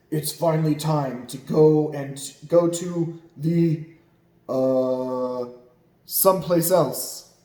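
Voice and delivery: loud, booming, slow voice with stretched "uh". Reading a story aloud as Papa Dinosaur speaks, loud booming Papa Dinosaur voice. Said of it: "said Papa Dinosaur in his loud, booming voice".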